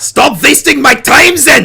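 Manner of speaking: put-on high-pitched, pushed German accent. Asked to give her a German accent, the speaker tries Siegfried's German accent. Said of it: "me trying to do a German accent".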